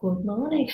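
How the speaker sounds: many pupils' voices speaking in unison. Retelling pupils answering at school assembly: imitating schoolchildren answering together. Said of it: "and everyone, like".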